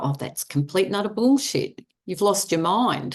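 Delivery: ordinary delivery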